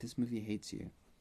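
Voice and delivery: hushed whisper. Retelling what a friend whispered during a movie: imitating a whisper. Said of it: "leaned over and whispered to me".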